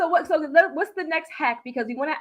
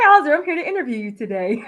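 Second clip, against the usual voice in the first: mock corporate, professional voice; 3 semitones higher, 6 dB louder than usual. Mocking people who put on a corporate voice, doing a mock corporate voice. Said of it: "I know somebody got that corporate voice".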